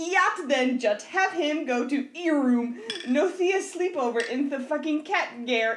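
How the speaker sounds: slow, deliberate, word-by-word all-caps readout. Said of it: "in all caps".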